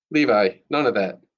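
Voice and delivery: plain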